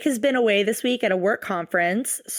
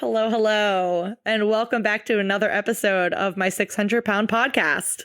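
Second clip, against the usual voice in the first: mechanical, robot-like delivery. Host opening a podcast episode, speaking like a robot. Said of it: "I just said that like a robot".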